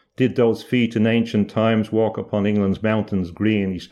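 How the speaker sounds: plain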